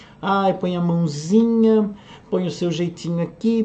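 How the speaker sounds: put-on doting, cooing, high, sweet baby talk. Showing diminutives, speaker talks like a mother to her child in sweet mommy baby-talk voice. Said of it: "tom de voz é de mãezinha falando com o filhinho ou com a filhinha".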